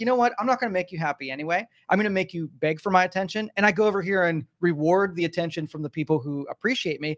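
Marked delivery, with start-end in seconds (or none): none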